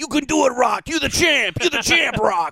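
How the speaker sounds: very high-pitched, encouraging coach-style voice. Retelling cheering on a crying friend during a tattoo: Rocky trainer pep talk. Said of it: "fucking Rocky".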